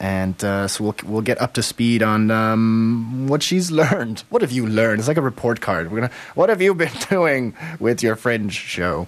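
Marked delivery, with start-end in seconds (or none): 6.3-9.1 grumpy, cranky voice. Quizzing a guest about her Fringe show, in a cranky mother voice. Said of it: "That's my cranky mother, Fringe mother voice".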